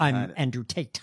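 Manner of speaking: put-on American accent, very over-articulated, each sound hit hard. Imitating Andrew Tate's American accent: Andrew Tate impression, over-articulating. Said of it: "he over-articulates like this".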